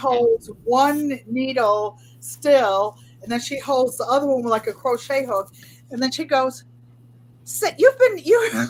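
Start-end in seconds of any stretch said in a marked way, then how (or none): 7.4-8.5 very high-pitched, piping motherly voice. Speaker imitates her mother commenting on her knitting: imitating mother's high voice. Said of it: "She has a high voice".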